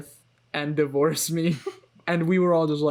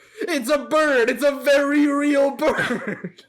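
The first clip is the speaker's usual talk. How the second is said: put-on shrill, very high, slow, very drawn-out yell; 10 semitones higher, 5 dB louder than usual. Recapping a movie scene with a bird: yelling impression of Mark. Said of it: "Can I do my impression of Mark".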